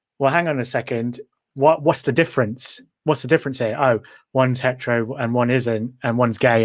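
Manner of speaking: usual speaking voice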